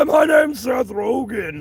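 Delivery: bubbly smoker's talking voice. Introducing himself as the actor, Seth Rogen voice. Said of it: "Let's try to do the Seth Rogen voice".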